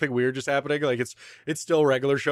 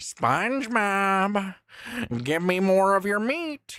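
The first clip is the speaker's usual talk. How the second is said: high, so-so cartoon voice; 6 semitones higher than usual. Answering a chat request with a Squidward voice. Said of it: "I can't do a very good Squidward".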